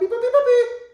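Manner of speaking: ridiculous squeaky voice, very high and loud. Showing how to make the pause interrupter sound for a dog, high-pitched silly voice. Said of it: "high-pitched, really ridiculous, silly voice like that".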